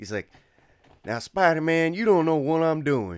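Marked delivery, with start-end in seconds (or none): 1.0-3.2 very loud, high, put-on Southern accent. Quoting a character from a spider-man cartoon, in a put-on southern accent. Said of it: "he has that uh, uh, like Southern accent".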